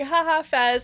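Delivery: high, loud, awkward, uncomfortable forced laugh. Retelling own reaction to a joke: imitating own uncomfortable laugh. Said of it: "uncomfortably laughing where I'm like".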